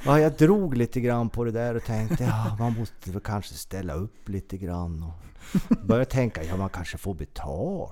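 loud, broad Norrland dialect.

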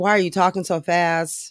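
normal talking voice

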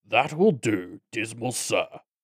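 growling goblin voice. Narrator reads a goblin's words in a growling goblin voice. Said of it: "the goblin growled".

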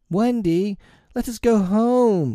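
very high, drawn-out cry, home stretched long. Narrator reads two children calling to a girl together, crying out. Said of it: "cried John and Michael together".

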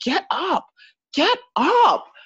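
coach voice shouting, very slow, drawn-out, very high. Retelling a fight where the coach yells at the fighter: imitating a coach yelling. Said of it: "his coach starts yelling at him".

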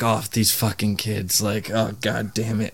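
weary, burnt-out washed-up coach voice. Picturing a friend as a washed-up wrestler coaching kids: imitating Jake as the washed-up coach. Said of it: "It'll be funny seeing Ki-, Jake, like, be like".

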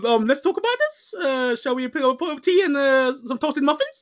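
high-pitched cartoon voice. Retelling how someone started talking during a conversation: Stewie voice. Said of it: "That's what I written down in Stewie's voice".

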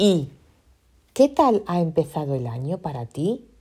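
clear rising pitch lift on "para ti". Checking whether question marks get picked up, said with questioning intonation. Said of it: "Yo le he hecho entonación de interrogación".

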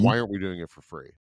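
normal talking voice

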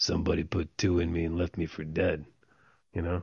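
low, soft, gravelly noir-style narration voice. Show a listener the film's old-school noir narration, in a gravelly Mel Gibson noir narration voice. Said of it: "Mel Gibson's gravelly voice".

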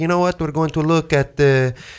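terrible, badly done fake French accent. Imitating a family of four from france visiting southern california: terrible french accent. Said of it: "this is a terrible French accent".

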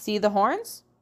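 plain reading voice

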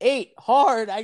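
yelled, acted caller call. Retelling a man calling out a dice roll: retelling a yell. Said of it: "the guy yells".

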